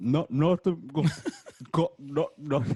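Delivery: mock mouth-full talking. Retelling how a person caught in class answered, imitating Sheila with a mouthful of food. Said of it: "like had a mouthful of food".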